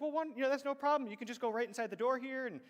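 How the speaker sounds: put-on ultra-courteous young valet voice. Retelling arriving at a fancy place, imitating a super gracious valet. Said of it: "and just super gracious".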